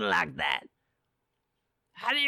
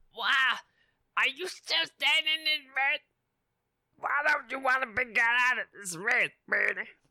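higher, strained put-on voice. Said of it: "That hurts my voice".

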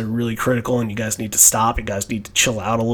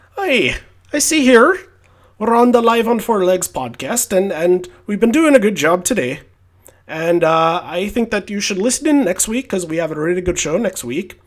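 attempted put-on Irish accent, pitched up; 8 semitones higher than usual. Host signing off the live on four legs podcast: attempted irish accent. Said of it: "I haven't really spoken the Irish accent today".

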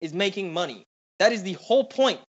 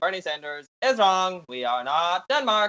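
ordinary talk, nothing marked

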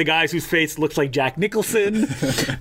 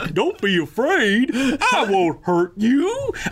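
put-on high, slow, swooping monster-kid voice; 7 semitones higher than usual. Reviewing a Godzilla set, a speaker imitates the English dub: Godzilla's son dub voice. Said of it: "he talks like this the entire time".

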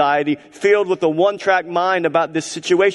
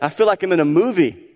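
usual speaking voice

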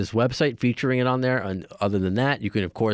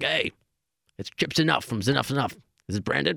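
bad, rough, creaky voice pitched up high; 5 semitones higher than usual. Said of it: "That's my terrible [name] impression".

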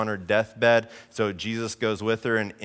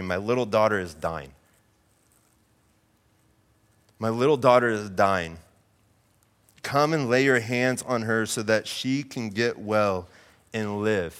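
ordinary delivery

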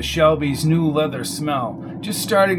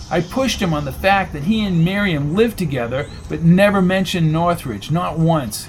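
plain

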